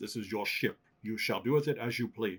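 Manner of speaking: put-on Scottish film-star voice. Telling learners the ship is theirs: Sean Connery impression. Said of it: "my Sean Connery impression".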